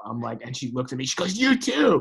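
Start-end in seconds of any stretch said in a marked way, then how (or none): 1.4-2.0 piercing, shrill, very loud screaming yell. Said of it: "she starts screaming at him".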